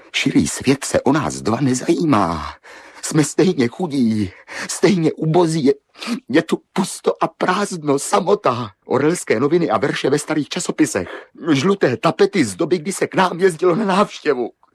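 high, loud, despairing shout. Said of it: "Nekřičte. Neplačte".

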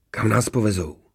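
plain reading voice

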